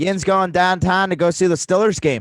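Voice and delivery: yins said in put-on Pittsburgh accent. Trying out how people in Pittsburgh say "yins", speak in an attempted Pittsburgh accent. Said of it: "I'll try to do it".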